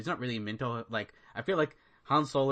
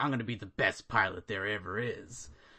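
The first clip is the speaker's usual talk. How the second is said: mock deep grumbling voice; 2 semitones lower than usual. Retelling a movie line, doing the lead's voice: Han Solo voice. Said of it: "me doing that voice is kind of what he's doing".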